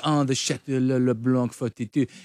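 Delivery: put-on French accent. Mocking how the other speaker orders wine: imitating a put-on french accent. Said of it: "ordering French wine at restaurants with the accent".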